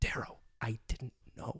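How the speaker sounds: hushed, soft, breathy whisper, barely voiced. Reading a book passage aloud, a dying character speaks: whispering. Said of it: "she whispers".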